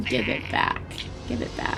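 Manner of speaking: menacing, ominous, breathy whispered voice. Telling a story about a phone call Josh gets: imitating an ominous voice. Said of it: "there's this ominous voice".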